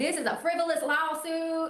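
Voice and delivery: put-on high, unhurried, drawn-out Brooklyn accent. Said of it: "her Brooklyn accent".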